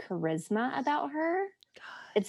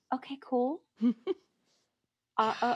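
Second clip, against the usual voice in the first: put-on freaked-out, numb, quiet and hushed voice; 2 semitones higher than usual. Retelling own reaction to news about the book: imitating a freaked-out quiet reply. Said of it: "this very freaked out, quiet".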